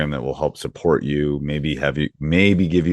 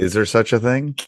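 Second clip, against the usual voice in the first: sarcastic, pitched-up, feigned disbelief; 7 semitones higher than usual. Reacting to the topic of coach burnout: sarcastic. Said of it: "I'm being sarcastic".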